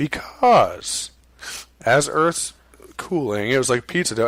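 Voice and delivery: very condescending, patronizing tone. Quoting Neil deGrasse Tyson's interview answer, mock-condescending Neil deGrasse Tyson. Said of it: "in this very condescending tone".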